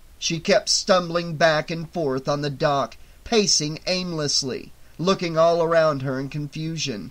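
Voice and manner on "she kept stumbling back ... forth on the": ordinary delivery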